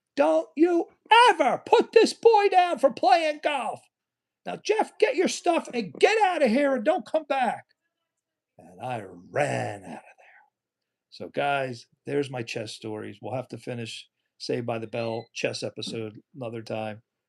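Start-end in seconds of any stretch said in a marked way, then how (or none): 0.2-7.7 mock shrill, very high, full-throated screaming. Retelling how the dean screamed at the police officer: imitating someone screaming. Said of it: "he screamed at the police officer".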